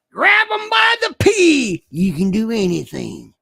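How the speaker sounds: loud, swooping, affected put-on Southern accent. Reading Donald Trump's words aloud, put-on Southern accent. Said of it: "may I read it in a Southern affectation voice? ... I get to read it in this voice".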